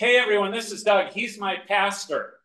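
very loud, shrill, high announcing voice. Retelling a woman introducing him to her workplace; very loud announcing voice. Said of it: "she announced in a very loud voice".

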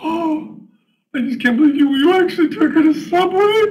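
very high, loud sock-puppet voice. The puppet reacts to Tricep taking a girl to Subway; sock puppet voice.

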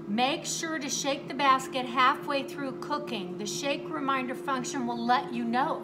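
ordinary delivery

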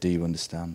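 put-on deadpan delivery. Retelling what the man who punched him said, deadpan. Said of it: "he just looked at me deadpan and said".

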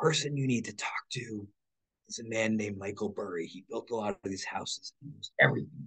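soft, secretive hushed voice.

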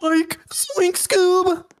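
very high-pitched cartoon voice. After thanking Daylon for two dollars, greeting the guys in a Shaggy voice. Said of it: "I'm Shaggy!".

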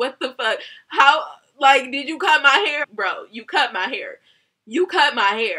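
loud, crying, angry, tearful yelling outburst. Retelling arguing with the stylist about cut hair: retelling crying while yelling. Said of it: "at this point, I'm crying".

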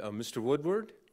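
put-on Middle Eastern-accented speech. Recalling a phone call to his office, voicing the caller in a Middle Eastern accent. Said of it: "gentleman with a nice Middle Eastern accent said".

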